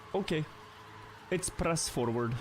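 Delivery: put-on a touch of Eastern European accent. Retelling what he said before he one-shot it, in a slight eastern european accent. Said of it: "with a bit more Eastern European accent".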